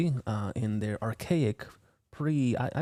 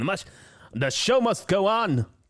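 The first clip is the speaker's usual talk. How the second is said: bold, loud, raised heroic voice; 8 semitones higher, 6 dB louder than usual. Narrating a video as the group keeps searching: heroic voice. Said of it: "That's my heroic voice".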